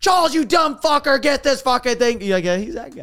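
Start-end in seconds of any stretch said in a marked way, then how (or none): 0.0-2.2 loud, high-pitched yell. Describing a host who yells at his crew, mock yelling at charles. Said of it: "It's like me yelling at Charles".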